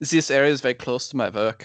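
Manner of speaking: careful, deliberate speech in a German accent. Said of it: "So, so here it goes".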